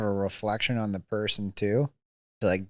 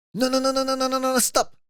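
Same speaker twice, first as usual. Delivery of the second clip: urgent put-on Italian accent, pitched very high; 4 dB louder than usual. Retelling how a medic reacted after the speaker fell and took off his jersey, Italian accent.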